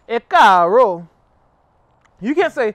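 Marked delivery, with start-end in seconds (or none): 0.1-1.0 varied rising and falling tones, louder. Teaching a Yoruba greeting, the speaker demonstrates fluctuating tonal pronunciation. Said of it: "You have to fluctuate it with the tones".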